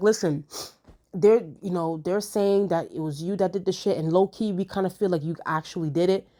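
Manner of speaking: plain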